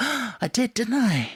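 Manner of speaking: mock innocent surprise. Retelling how an actor pretends not to notice swapping a line: imitating feigned surprise. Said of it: "he pretends he didn't even notice".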